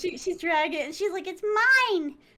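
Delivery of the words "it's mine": put-on high-pitched little-girl character voice. Retelling a story scene, doing the voices: voicing the girl character. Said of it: "I should be doing the voices".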